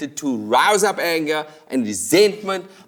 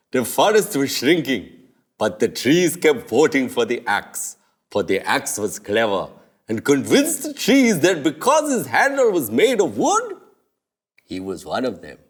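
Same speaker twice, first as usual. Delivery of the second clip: animated comic voice swinging up and down; 3 semitones lower than usual. Answering why the working class votes for those who steal from them, in a King Julian voice. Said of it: "I don't know why I did a King Julian voice".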